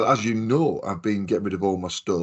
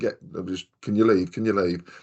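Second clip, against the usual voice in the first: ordinary talk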